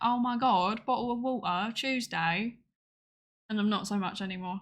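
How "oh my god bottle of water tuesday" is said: exaggerated British accent. Speaker demonstrates the accent they trained themselves out of, stereotypical accent impression. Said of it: "the definition of stereotypical".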